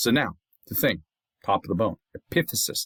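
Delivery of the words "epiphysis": epiphysis with the -pi- syllable leaned on. Naming the end of a long bone, stress second syllable of epiphysis. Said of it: "accent on the second syllable".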